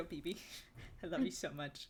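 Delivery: hushed, very quiet, soft-spoken, barely-there voice. Voicing a character holding a child in a tabletop game: speaking very quietly. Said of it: "I very quietly".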